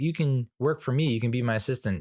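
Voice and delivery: ordinary talk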